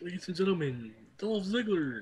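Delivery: high, loud, belted, cheesy announcer style. Retelling a backstage announcement for Dolph Ziggler: imitating Big E's cheesy announcement. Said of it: "sounded really cheesy".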